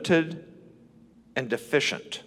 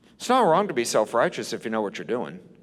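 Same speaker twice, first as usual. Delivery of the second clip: ordinary delivery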